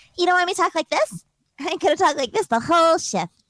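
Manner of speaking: put-on eerie little-girl character voice. Teasing the others who asked for the voice: creepy little girl voice. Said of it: "your creepy little girl voiceover".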